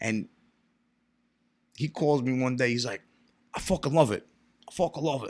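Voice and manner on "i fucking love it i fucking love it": put-on Sicilian immigrant accent. Retelling a phone call from a rich Sicilian cousin: imitating Sicilian immigrant cousin. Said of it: "He's talking to me like that".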